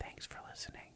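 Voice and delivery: whispering. Repeating a sign-off after being misheard, whispering. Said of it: "Whispering to people?".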